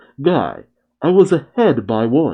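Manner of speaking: normal talking voice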